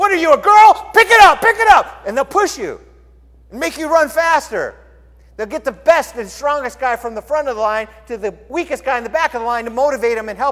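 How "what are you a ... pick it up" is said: very high, shrill, booming, very loud drill instructor scream. Retelling how academy instructors pushed lagging runners: imitating an instructor yelling. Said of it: "they start yelling at you".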